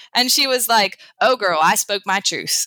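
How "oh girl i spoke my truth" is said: put-on strong, down-home rural country accent. Telling about a woman who came to sessions, the speaker quotes her in a country accent. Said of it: "I'm sounding really country when I say this".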